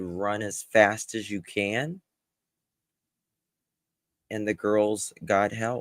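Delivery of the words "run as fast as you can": normal talking voice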